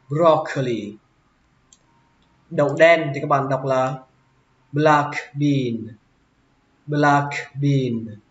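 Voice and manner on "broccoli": broccoli, pitch high on broc, falling on coli. English pronunciation lesson on the word broccoli: stress on brock in broccoli. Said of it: "lên giọng brock và xuống giọng curly".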